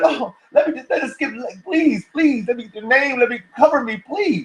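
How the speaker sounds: high-pitched woman's voice, pleading over and over. Acting out a woman who wants to be covered: imitating a woman pleading. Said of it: "She gonna be like".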